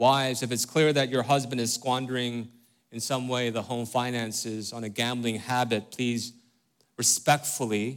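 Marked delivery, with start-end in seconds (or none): 7.0-8.0 respectfully stressed and stretched with a rising tune. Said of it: "Accent on respectfully".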